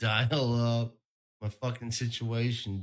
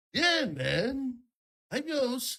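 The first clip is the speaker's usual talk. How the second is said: very high, sing-song, swooping, slow drawn-out drawl; 14 semitones higher than usual. Doing an impression of Mark Norman. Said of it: "this is Mark Norman".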